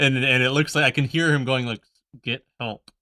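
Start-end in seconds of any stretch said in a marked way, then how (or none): 2.2-2.8 speaking through gritted teeth, quieter. Voicing a smiling game-cover figure who seems trapped: speaking through clenched teeth. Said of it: "through his teeth".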